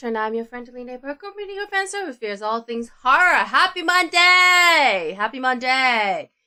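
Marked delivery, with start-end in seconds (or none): 3.4-6.2 loud, very slow overdone cheer, "Monday" stretched. Horror host greeting the audience at the start, overly excited greeting. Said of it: "I sound so much more excited".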